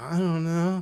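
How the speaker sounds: mock frightened, terrified voice. Retelling a scene where a cop stops a girl: imitating a terrified girl. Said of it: "fucking terrified".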